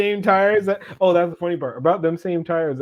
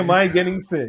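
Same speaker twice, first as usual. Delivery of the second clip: ordinary delivery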